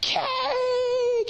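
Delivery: put-on excited children's voices, shouting loudly.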